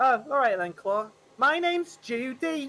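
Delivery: fake Liverpool accent. Answering another character who has just introduced themselves, in a put-on scouse accent. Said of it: "this is Scouse. I thought this was Cockney".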